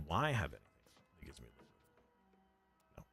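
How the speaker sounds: hushed, soft half-whisper. Thinking out loud while checking game options, half-whispering. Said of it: "I'm starting to whisper".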